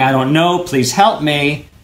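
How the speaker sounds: very meek, timid voice. Showing how a lead could play a questioned prisoner: very meek. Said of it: "where he's very meek and going".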